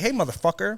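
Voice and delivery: shrill, loud, play-acted furious yell, temper lost. Retelling calling out to a stranger who hit a truck: imitating someone yelling. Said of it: "and I yelled out".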